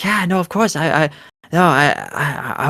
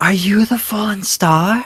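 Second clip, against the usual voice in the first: put-on high, awed little girl voice brimming with wonder; 6 semitones higher than usual. Voicing a young girl who looks up at the players, in awe. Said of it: "just look of awe, and just goes".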